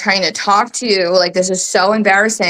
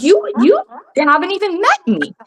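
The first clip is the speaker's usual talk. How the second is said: put-on, very high, shrill, swooping screech at full volume; 11 semitones higher than usual. Retelling how the mother came down the stairs screaming: imitating someone screaming.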